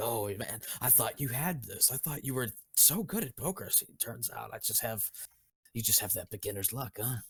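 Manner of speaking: chuckling through every word while talking. Voicing a poker player gloating after winning a hand: laughing while talking. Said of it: "he's just laughing like".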